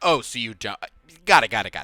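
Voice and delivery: put-on offhand, dismissive tone. Retelling a character's reply to a whispered goal, imitating a dismissive tone. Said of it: "He kinda just was dismissive".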